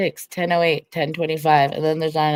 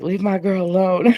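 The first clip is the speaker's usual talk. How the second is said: put-on drunk voice, higher pitched; 4 semitones higher, 4 dB louder than usual. Retelling what the other speaker said while drunk: imitating a drunk voice. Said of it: "you were drunk on Deadly's panel and you were like".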